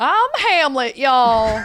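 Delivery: very loud, high put-on Southern accent. Joking about playing Hamlet in a modern Shakespeare: mock Southern accent. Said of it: "doing, like, a Southern accent".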